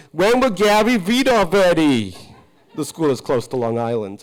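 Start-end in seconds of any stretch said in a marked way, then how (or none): 0.2-2.2 put-on loud, drawn-out shouting of many children. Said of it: "they will shout out".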